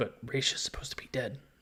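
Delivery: soft, hushed whisper under the breath. Voicing a character who answers the whispering group: whispering as Terry. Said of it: "whispers Terry".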